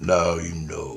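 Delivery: mock vicious, enraged delivery in deep voice. Describing a dream, speaker acts out a red-eyed figure: imitating a deep, vicious rage. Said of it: "like vicious and rage".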